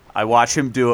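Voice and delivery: normal talking voice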